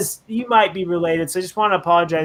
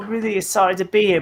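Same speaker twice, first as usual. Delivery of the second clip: put-on parody British accent; 2 semitones higher than usual. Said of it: "it's British, it should be that one".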